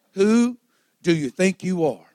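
play-acted, full-on, really sassy tone. The speaker retells the Lord's words to him, retelling a sassy line. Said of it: "he said it real sassy like that".

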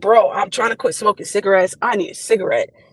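plain

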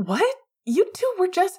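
very high, out-of-breath stammering. Narrator reads a character who has just run up to two others; breathless stammering. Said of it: "he stammered".

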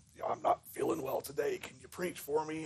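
fake raspy gravelly voice, barely whispered. A man phoning the associate minister so he can go golfing, fake gravelly voice. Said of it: "in his best gravelly voice said".

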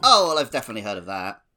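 loud, sarcastic tone, feigning being impressed. Replying after being told the right quiz answer: sarcastic. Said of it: "are you being sarcastic with me?".

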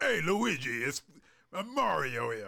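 put-on New York accent. Speaker says the movie hero should sound New York, like the cartoon: Mario voice, New York accent. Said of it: "Give him like a New York accent".

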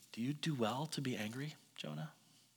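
quiet, hushed voice. Retelling the story, the speaker quotes his question to an angry man, quiet voice. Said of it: "quiet voice".

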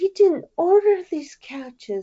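put-on little baby voice, pitched very high. Imitating a film character's line in her little baby voice. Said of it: "her little, like, baby voice".

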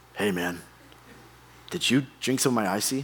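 deep, low-pitched voice. Retelling a stranger in a dark movie theater asking a question: imitating a stranger's deep voice. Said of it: "a really deep voice".

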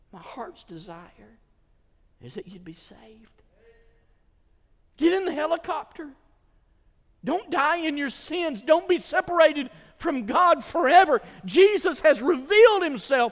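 earnest, beseeching, imploring, openly begging delivery. Speaker addressing listeners as Paul addressed his people, beseeching. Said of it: "And I'm beseeching you".

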